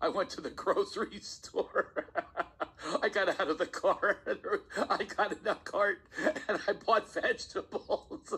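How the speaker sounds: high chatter, talking right through laughter. Demonstrating chuckle chatter, the speaker tells a simple story while talking through laughter. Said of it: "I do it as I'm laughing".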